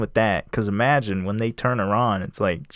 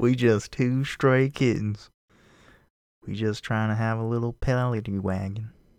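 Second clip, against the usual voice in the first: put-on down-South American accent, southern US; 3 dB quieter than usual. Retelling a story, quoting an abandoned character, southern accent. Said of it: "got a southern accent".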